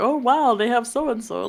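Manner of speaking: casual, relaxed, offhand reading-aloud tone. Imitating Reagan just reading books and going: imitating Reagan reading books. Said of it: "Reagan is just going to be straight up just reading books and going".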